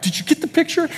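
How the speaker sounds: very high, sobbing, crying voice. Speaker recalls holding down his screaming child, imitating his own past crying. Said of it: "and I'm crying like".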